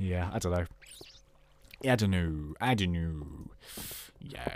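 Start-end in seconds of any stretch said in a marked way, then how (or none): 1.8-4.5 put-on deep voice, very hushed and slow. Commentating a Minecraft video, dropping into a put-on low voice. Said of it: "that was just me doing a low voice".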